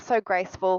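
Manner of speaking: ordinary talk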